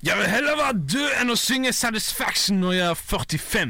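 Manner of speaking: slow, loud, high attempted British accent.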